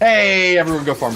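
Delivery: high, loud calling out.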